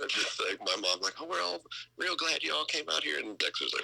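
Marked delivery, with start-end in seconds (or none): 1.2-3.2 put-on very high-pitched heavy Oklahoma accent. Speaker imitates their mom during an interview, thick Oklahoma accent. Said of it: "my mom's super thick Oklahoma accent".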